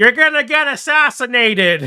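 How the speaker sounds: very high-pitched, loud, alarmed scream. Retelling the speaker's own reaction during a story, retelling a scream of alarm. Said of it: "and I'm like screaming".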